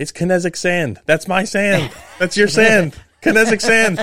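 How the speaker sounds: very high, loud, thrilled, gushing. Retelling a son calling the wife in about a TV ad: imitating someone really excited. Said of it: "he called my wife in really excited".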